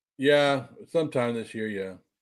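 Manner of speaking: low, sad, glum, downcast voice. Predicting a future world heavyweight title win, sad. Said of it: "Why do you sound so sad about it?".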